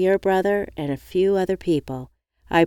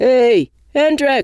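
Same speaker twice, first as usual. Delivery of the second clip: loud, high, yelled-out shout; 6 semitones higher, 7 dB louder than usual. Narrator reads a friend calling from a car window, yelling out a car window. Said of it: "One of them yelled out of the window".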